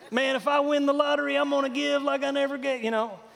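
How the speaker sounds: put-on Texas accent. A preacher repeating what people tell him, in Texas accent. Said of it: "they talk in that kind of an accent".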